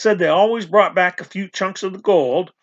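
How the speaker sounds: ordinary delivery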